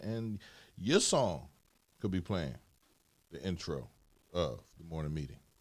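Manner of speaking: very low, soft on-air announcer voice. Speaking in a morning meeting, in a radio voice. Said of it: "Just your radio voice".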